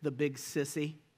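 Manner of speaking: put-on very hushed, shaky, low little-boy voice. Ending the story with the little boy's reply to his mommy: imitating a boy's shaky voice. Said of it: "the shaky voice declared".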